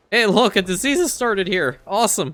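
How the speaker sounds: voice suddenly breaking on the words. Playing a strategy game, reacting to a new event: voice cracking. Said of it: "I don't know why my voice cracked".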